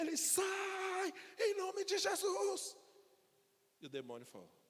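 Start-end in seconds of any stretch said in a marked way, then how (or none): 0.2-2.8 mock huge, loud yell, higher. Retelling a terrified deacon casting out a demon: imitating a huge shout. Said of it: "ele deu um grito tão grande".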